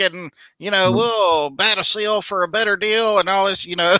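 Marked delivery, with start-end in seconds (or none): 0.9-3.2 put-on rapid salesman patter, higher pitched. Retelling what a car salesman says: imitating a fast-talking car salesman. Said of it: "he's talking really fast".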